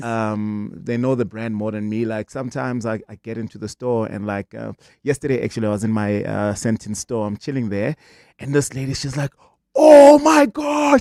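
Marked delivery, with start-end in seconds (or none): 9.7-11.0 shrieking scream, very high and very loud. Retelling a lady in the store who spots the speaker, imitating her screaming. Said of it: "She's screaming".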